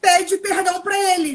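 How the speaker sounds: loud, high-pitched yell. Retelling a doctor ordering a woman to apologize: imitating someone yelling. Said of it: "E gritando com ela na sala".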